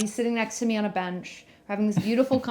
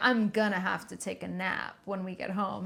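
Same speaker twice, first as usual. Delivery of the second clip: put-on exaggerated tired voice, quieter; 4 dB quieter than usual. Retelling a friend hinting on the way home: imitating obviously faked tiredness. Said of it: "really obviously being like".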